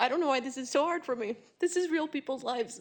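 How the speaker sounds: choked-up, tearful, crying voice, breaking. Speaking while actually crying: crying while speaking. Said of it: "I'm actually kind of crying".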